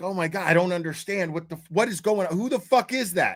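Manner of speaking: freaked-out, bewildered, frantic, confused panicked babbling. Retelling waking up confused in a stranger's house: retelling own panic. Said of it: "I freaked out".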